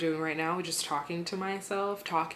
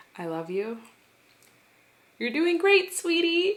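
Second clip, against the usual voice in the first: very high, choked-up voice on the verge of crying; 12 semitones higher, 7 dB louder than usual. Speaking to oneself the way one talks to one's son, choking up near tears. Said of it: "I'm really gonna cry now".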